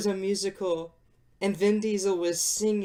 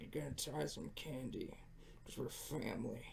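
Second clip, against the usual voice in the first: very hushed, breathy, whispered mumble under breath; 8 semitones lower, 23 dB quieter than usual. Joking about an imagined scene, talking in a Vin Diesel mumble voice. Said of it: "he talks in his mumble voice like".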